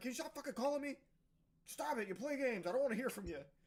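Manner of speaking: scolding, berating tone. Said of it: "He just berates him again".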